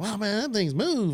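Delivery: Texan way of talking. Speaker retells a man's reaction while watching, imitating his Texas accent. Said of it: "he's got a Texas accent".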